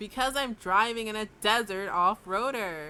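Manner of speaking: long, stretched, very loud drawn-out yell. Answering a nervous passenger while driving over dunes: drawn-out shout. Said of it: "I draw out my voice and shout".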